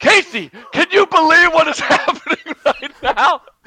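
sincere, very loud, high, full-voiced exclamation. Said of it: "say it in full voice".

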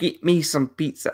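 high, bad put-on New Zealand accent.

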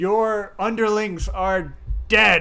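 loud bellowing shout, slowing on the second line.

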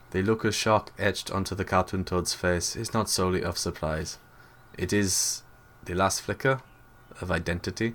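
narrator voice with a middling German accent. Narrating about a cartoon toad's shocked face, Werner Herzog German accent. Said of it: "you need to do the Werner Herzog voice, and this is not a particularly good Werner Herzog".

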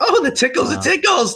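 very high-pitched, shrieking scream. In character, covered in spider babies: screaming. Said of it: "Yeah, I'm screaming".

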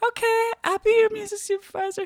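very high, put-on stock female voice. Quoting a woman agreeing to be music supervisor, put-on woman's voice. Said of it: "That's how all women in my head sound when I try to imitate their voice".

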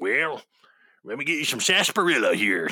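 Wild West saloon bartender voice. Describing a favorite bartender from a TV show, doing his old west bartender voice. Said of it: "with like an old west bartender voice".

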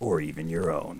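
affected cool-sounding voice. Podcast host speaks in a voice a co-host questions: put-on cool-sounding voice. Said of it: "Why are you doing that voice?".

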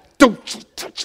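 under-the-breath threatening voice. Showing how parents scold kids in public: parent's under-the-breath voice. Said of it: "the under the voice voice".

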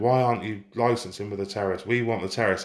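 ordinary talk

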